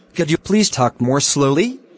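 plain

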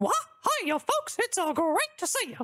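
low-pitched cartoon mouse character voice. Starting a stream, greeting viewers in a Mickey Mouse impression. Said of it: "my best Mickey Mouse impression".

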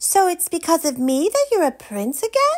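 very high, proud, pleased-with-herself tone. Poppy asks the prince after he explains the spell, feeling rather proud. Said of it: "feeling rather proud".

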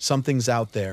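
usual speaking voice

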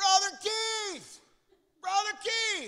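loud, high, slow calling-out yell.

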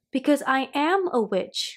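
proud, declaring tone. Asked by Miss Brooks, Little Witch answers proudly. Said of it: "said Little Witch proudly".

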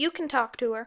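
ordinary delivery

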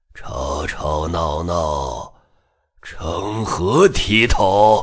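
deep husky rasp, very low, hoarse, unhurried. A narrator reads the Great Celestial Master's line as he emerges, hoarse voice. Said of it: "大天师沙哑的声音徐徐回荡".

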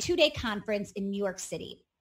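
plain

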